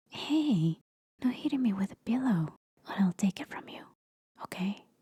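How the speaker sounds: sweet, goofy, playful teasing. A girlfriend talking to her partner, sweet and goofy. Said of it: "you have a sweet, goofy [girlfriend]".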